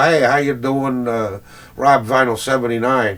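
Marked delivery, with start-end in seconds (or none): none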